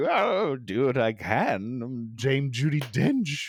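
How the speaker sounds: very slow, every word drawn out. Acting out an imagined phone call, imitating Judi Dench. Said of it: "And she was like".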